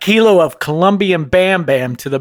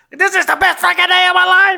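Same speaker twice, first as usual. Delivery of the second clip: put-on scream, higher pitch. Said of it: "starts screaming in there".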